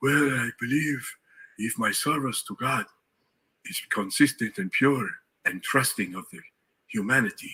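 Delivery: put-on thoughtful tone in a Nigerian accent. Recalling Olajuwon's answer to an offbeat question, in Olajuwon's Nigerian accent. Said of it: "he's got this Nigerian voice".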